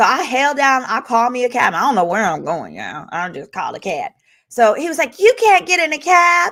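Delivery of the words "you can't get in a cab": weak, wimpy, feeble, pitched-up man's voice. Retelling a dispute with a man, the speaker imitates him in a mocking wimpy voice. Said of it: "he just sounded like a total pussy".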